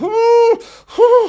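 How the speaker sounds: very high, loud, dog-like excited whine.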